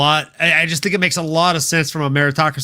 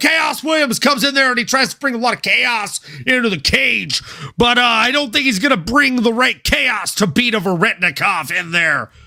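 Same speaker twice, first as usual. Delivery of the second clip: announcer voice, pitched higher; 7 semitones higher than usual. Repeating own call from the announcer table as a Mauro impression. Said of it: "my best and worst Mauro impression".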